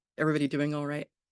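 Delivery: slightly fast, rattled-off delivery.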